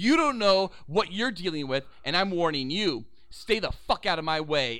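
ordinary talk

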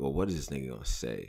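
soft, low, baffled and puzzled. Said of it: "leaves his opponent with like".

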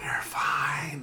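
acted whispering. Acting out a base answering a call: acted whispering. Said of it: "Why are you whispering?".

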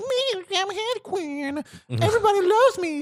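very high, bubbly voice. Mocking a film's characters, doing a Harley Quinn impression. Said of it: "That is a great impersonation".

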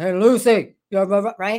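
big, booming, slow, deliberate voice. The speaker acts out an imagined voice speaking to her, big voice. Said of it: "this big voice going".

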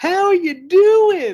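loud, very high, belted falsetto. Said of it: "where we get like the falsetto".

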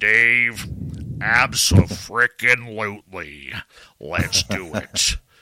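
deep dulcet put-on voice. Retelling a phone call about planning shows: Jimmy Church deep dulcet voice. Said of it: "Jimmy in his deep, nice voice".

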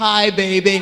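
put-on deep, low romance-hero voice. Acting out a romance-novel suitor's greeting: put-on deep voice. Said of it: "he just has to have a deep voice".

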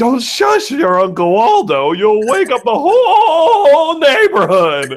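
mock drunk voice, very high, loud, all drawn out. Speaker retells a drunk character being shushed by others, imitating a drunk. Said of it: "he's so drunk".

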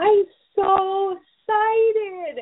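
put-on very high, tiny little toddler voice. Retelling how a toddler answered the speaker, in his little toddler voice. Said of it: "in his little toddler, you know, way".

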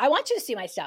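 plain

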